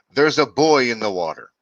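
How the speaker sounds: loud, alarmed scream. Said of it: "someone screams".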